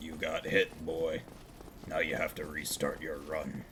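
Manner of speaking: low, quiet, gruff voice. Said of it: "always does the Kratos one".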